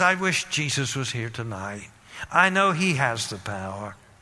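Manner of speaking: low, wistful tone.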